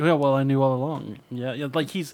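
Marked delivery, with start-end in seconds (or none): 0.0-1.2 mock coy tone, lower. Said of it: "he's playing it off coyly".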